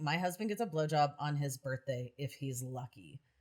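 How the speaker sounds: put-on delivery dripping with contempt and disgust. Speaker retelling what the lady behind them said: imitating contemptuous disgust. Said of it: "she said it with so much contempt and disgust".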